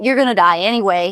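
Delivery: ordinary talk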